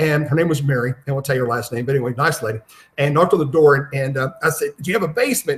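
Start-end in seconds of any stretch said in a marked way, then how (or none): 4.8-5.6 light, called-out yell. Retelling what he asked a woman at her door after breaking down, retelling a yell. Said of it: "she wanted to know why I was yelling".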